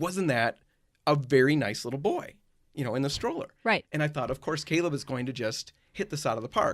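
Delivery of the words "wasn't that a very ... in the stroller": ordinary talk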